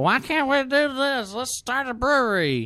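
put-on tipsy, very high-pitched drunk voice. Reading out a man's text message the way he sounded, in a mock-drunk voice. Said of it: "This is my drunk voice".

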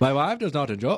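failed fake Irish accent. Two speakers take turns attempting the same phrase, bad irish accent. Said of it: "I don't think that's a very good Irish accent".

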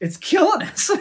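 very high, very loud, shrill, exasperated outburst. Retelling a coffee executive's reply to a question: imitating an exasperated executive. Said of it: "he looks at me exasperated".

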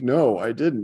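put-on boy voice, near tears. Retelling how Jason answered when asked about washing his hands, imitating Jason almost crying. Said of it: "he's almost crying".

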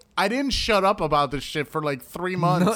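normal talking voice

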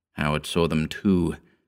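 ordinary delivery

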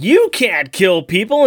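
high, mild half-shouted yell up close. Describing a scene where Alex confronts Sobek; retelling Alex yelling. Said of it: "he's yelling up in his face".

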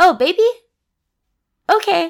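put-on nonchalant tone. Retelling a scene where the baby is coming: imitating a nonchalant reply. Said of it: "nonchalant about it".

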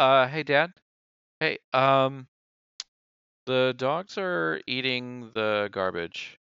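put-on very slow, halting little-kid voice. Acting out a little kid waking a parent: little kid voice. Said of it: "a little kid coming in going".

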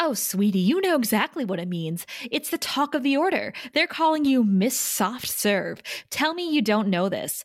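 put-on catty, bitchy tone. Recapping an episode where Halfrek speaks to Anya, retelling Halfrek being bitchy. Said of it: "Halfrek being bitchy to Anya".

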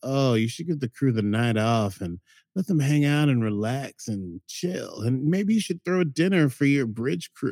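sultry, seductive computer voice with giggling laughter. Retelling a show where the computer starts talking differently: sultry, laughing femme fatale voice. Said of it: "sultry, laughing, femme fatale voice".

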